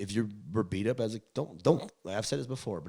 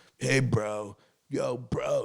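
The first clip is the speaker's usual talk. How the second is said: very slow, drawling skater-stoner voice; 3 semitones higher, 4 dB louder than usual. Retelling how a dad's friend talked: imitating Bree's stoner voice. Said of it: "He talked like that".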